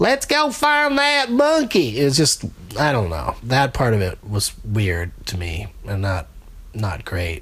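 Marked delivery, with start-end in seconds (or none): 0.0-2.0 put-on very high-pitched Texas Southern accent. Describing a King Kong attraction, imitating its narrator: Texas Southern-ish accent. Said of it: "a lady with a Texas Southern-ish accent narrating".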